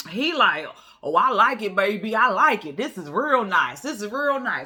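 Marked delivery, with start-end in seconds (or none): 1.1-4.7 thrilled, super excited, gushing with delight. Retelling a man's reaction to his new home: imitating him super excited. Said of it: "he's super excited".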